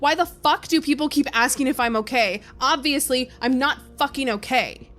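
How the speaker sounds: put-on frustrated shout. After hanging up the phone, shouting to the heavens; retelling a frustrated shout. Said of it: "I am shouting this into just the environment".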